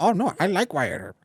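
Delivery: put-on New Mexican accent. Asking about a hypothetical cousin in new mexico, speaker voices them in put-on new mexican accent. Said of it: "Sorry for the accent".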